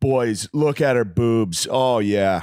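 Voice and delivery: put-on dude-bro party MC voice with Canadian accent. Describing a DJ who was MCing, imitating a Canadian bro. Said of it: "literally just a Canadian bro, just like".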